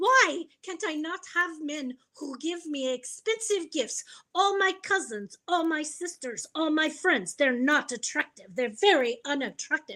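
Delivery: put-on Ukrainian accent. Retelling what a woman in the ER said: imitating a Ukrainian accent. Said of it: "her accent made her a little cuter".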